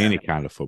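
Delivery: ordinary talk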